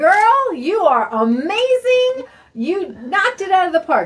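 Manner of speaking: high, loud gushing praise.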